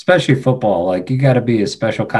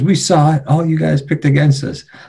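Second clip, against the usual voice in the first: mock screaming at a much higher pitch; 7 semitones higher than usual. Recalling someone running past the locker room in Dallas, retelling Micah Hyde screaming. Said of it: "He's screaming into the cameras".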